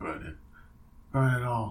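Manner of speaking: soft, quiet, hushed delivery. Joking about the end of Godfather with a fellow talker, impression sounding like Marlon Brando. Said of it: "That's my young apogee impression".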